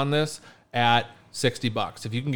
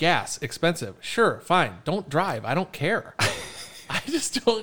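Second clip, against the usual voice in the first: riled-up venting, high and a bit heated; 5 semitones higher than usual. Talking about small talk at backyard parties, a little worked up. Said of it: "sorry, I'm a little worked up".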